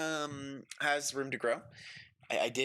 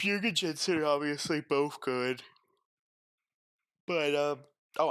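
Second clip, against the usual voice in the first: yawning while speaking, much slower; 4 dB louder than usual. A commentator ranks players into tiers, yawning while talking. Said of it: "I'm sorry, I'm yawning".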